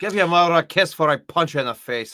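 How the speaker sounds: put-on Scottish-accented voice. Quoting a favorite line from So I Married an Axe Murderer: Mike Myers Scottish voice. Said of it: "Mike Myers Scottish voice".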